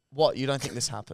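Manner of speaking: put-on frustrated man voice. Retelling a phone call about paying a registration, the man replies; imitating a frustrated man. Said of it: "He got so frustrated so quickly".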